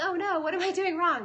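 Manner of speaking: high, loud, alarmed oh-no voice. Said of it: "And so they were like".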